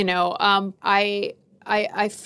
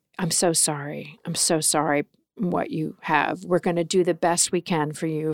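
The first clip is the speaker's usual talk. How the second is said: mock compassionate, sympathetic tone, lower; 4 semitones lower, 3 dB quieter than usual. Retelling how the first doctor gave the diagnosis: imitating a compassionate doctor. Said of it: "the way he said it".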